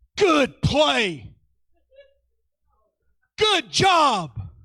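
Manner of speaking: fierce, very high pitch, very slow, drawn-out delivery. Recalling his dad's words to him on the ball field, retelling dad's fierce, competitive praise. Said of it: "he says it in his fierce, competitive mindset".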